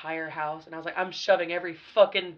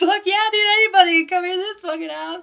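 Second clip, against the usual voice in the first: put-on very high-pitched, wasted drunk voice; 13 semitones higher, 9 dB louder than usual. Recalling a house party, the speaker quotes their past self, imitating own drunk self. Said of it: "Fucking drunk off my ass".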